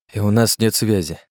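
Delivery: plain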